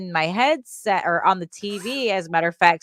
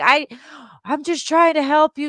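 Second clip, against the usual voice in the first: put-on male yell, higher and louder; 8 semitones higher, 4 dB louder than usual. Retelling what a stranger said over the game headset: imitating a man yelling. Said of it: "he starts yelling at me like".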